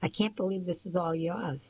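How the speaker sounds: ordinary delivery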